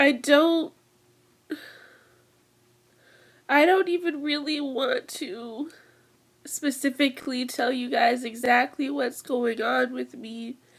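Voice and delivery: tearful voice, crying while talking. Speaking to viewers about what is going on, crying while talking. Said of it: "I'm crying".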